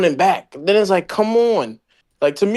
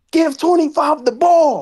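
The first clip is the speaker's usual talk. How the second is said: play-acted, pitched-up hollering; 8 semitones higher than usual. Speaker recalls watching the game on tv, retelling screaming at the tv. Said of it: "I'm watching the T V screaming".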